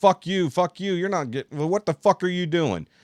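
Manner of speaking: mock furious, high, angry yelling. Speaker retells a driver screaming at them from his window: retelling a driver's screaming. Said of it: "he starts screaming at me".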